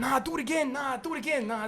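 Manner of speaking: high-pitched, hushed, picky and fussy voice.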